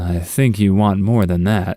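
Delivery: mock-seductive, flirty put-on sexy voice. Retelling a customer's remark while ordering, retelling a sexy voice. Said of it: "he says in a sexy voice".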